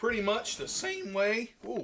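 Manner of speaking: voice cracking. Host seasoning the chicken on camera, voice cracking. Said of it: "voice crack on camera".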